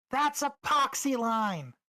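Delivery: very high, loud, shouted yell. In a tabletop game, a character calls after someone flying away: yelling after someone. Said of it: "she yells after".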